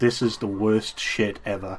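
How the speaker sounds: ordinary delivery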